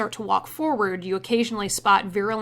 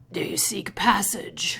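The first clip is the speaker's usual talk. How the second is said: really raspy, rough, grating, gravelly voice. Voicing a figure the party approaches, in a really raspy, gravelly voice. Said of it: "it says in this really raspy, gravelly voice".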